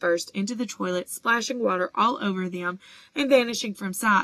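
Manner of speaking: ordinary delivery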